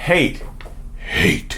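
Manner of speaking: put-on evil demonic growling voice. Showing viewers a narcissist's inner demon voice, say it in an inner demonic voice. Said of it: "there's that inner demonic voice".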